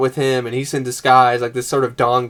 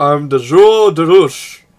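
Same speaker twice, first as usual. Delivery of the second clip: loud, slow put-on Brazilian man voice; 4 semitones higher, 7 dB louder than usual. Retelling a movie scene, imitating Harry Crumb as Brazilian guy. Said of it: "He dresses up as this, like, Brazilian guy".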